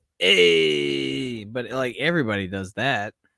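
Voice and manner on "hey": Hey belted out loudly. Answering a request with the only impression known: Fonz impression. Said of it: "the only impression I can do of the Fonz".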